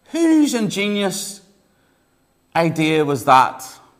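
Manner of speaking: amazed farmer voice, loud, high, swooping shout upward. Telling a joke, a farmer calls up to fliers: farmer shouting up. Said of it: "he shouts out to the travelling trio".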